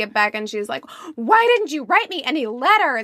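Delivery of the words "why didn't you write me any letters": mock angry yelling. Retelling a scene where she confronts him when they get back, retelling her yelling at him. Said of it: "she starts yelling at him".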